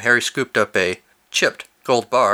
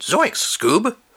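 pitched-up, high, popping cartoon-style exclamation; 10 semitones higher than usual. Telling a story, the speaker calls after departing space invaders; Shaggy impression. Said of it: "my spot-on Shaggy impression from Scooby-Doo".

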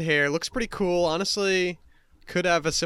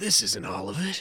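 put-on cooler voice, lower; 5 semitones lower than usual. Guessing how Anthony Oldschool sounds: cooler Anthony Oldschool voice. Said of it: "more cool voice".

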